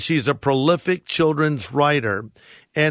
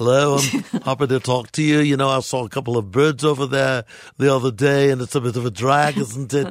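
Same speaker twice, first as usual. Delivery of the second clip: chatty, relaxed Liverpool (Scouse) accent; 2 semitones lower than usual. Speaker switches from a posh voice to show off a Liverpudlian accent. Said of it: "more of a Liverpudlian accent".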